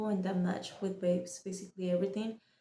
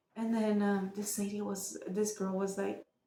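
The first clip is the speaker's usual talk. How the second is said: plain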